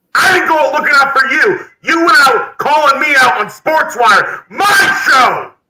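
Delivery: angry promo-style shout.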